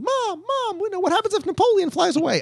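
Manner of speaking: put-on very high, small child's little boy voice. Recalling Horizons, the speaker imitates a little boy talking to his mom: little boy impression. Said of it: "like little boy impression ever".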